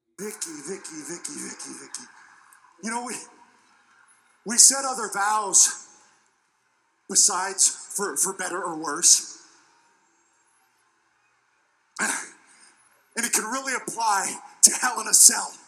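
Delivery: put-on voice through gritted teeth. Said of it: "just gritting his teeth and talking through his, his teeth".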